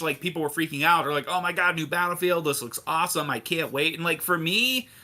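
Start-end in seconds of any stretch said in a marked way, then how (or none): none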